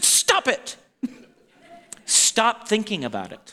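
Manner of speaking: mock-aggressive, put-on forceful delivery. Retelling a comedic skit, playing his line to her, mock-aggressive. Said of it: "he's like real aggressive".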